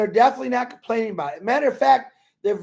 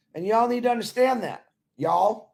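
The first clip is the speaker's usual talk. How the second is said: put-on cowboy voice; 4 dB quieter than usual. Speaker wearing a cowboy hat addressing the audience, talking like a cowboy. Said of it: "I'm talking like a cowboy now".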